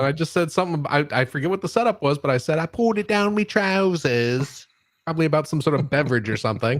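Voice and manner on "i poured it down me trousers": slow, goofy, stupid put-on voice. Retelling a line from a car ride years ago: stupid voice. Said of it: "I was doing a stupid voice".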